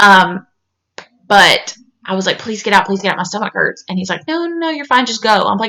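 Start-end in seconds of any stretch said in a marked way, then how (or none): 2.4-3.8 fast, earnest, hard pleading. Recalling begging a person to get out of the bathroom, retelling pleading. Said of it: "Just begging, like pleading this person".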